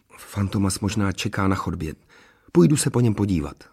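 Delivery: plain reading voice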